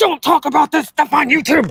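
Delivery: mock scolding, high, furious yelling. Recounting how a woman yelled at him in the car, imitating her yelling. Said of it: "she yelled at him and was like".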